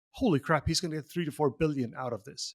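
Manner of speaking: ordinary delivery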